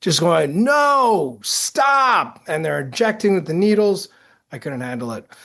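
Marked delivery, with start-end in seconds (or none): 0.6-2.4 mock high yelling with a long, drawn-out "no". Retelling reacting to a brutal episode on tv: imitating someone screaming at tv. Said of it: "that's just screaming at the".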